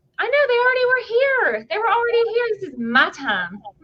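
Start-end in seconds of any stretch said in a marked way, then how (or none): 2.6-3.6 gentle Texas-sounding accent. Claiming her turn after the others already had their shows; texan accent. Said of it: "Did you hear that Texan accent?".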